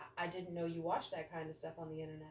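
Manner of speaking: hushed, very quiet, bone-dry flat deadpan monotone. Suggesting a comeback for when a stranger says your face looks familiar: deadpan. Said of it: "be dead silent, straight face, just stare at them and go".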